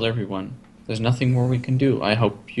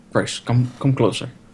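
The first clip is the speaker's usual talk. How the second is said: put-on conspiratorial, secretive delivery. Retelling a game scene, the speaker acts out a character calling another closer, in put-on conspiratorial tone. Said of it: "looks around conspiratorially".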